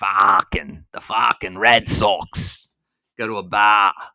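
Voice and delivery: loud, very slow Boston accent. Playing on an accent that just slipped out, in a boston accent. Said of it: "My uh, Boston accent came out there".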